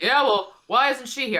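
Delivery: sarcastic put-on actor voice. Imagining how the actor answers a fan message: sarcastic Bruce Campbell voice. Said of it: "so sarcastic as Bruce is".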